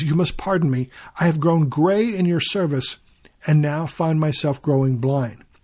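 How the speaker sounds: usual speaking voice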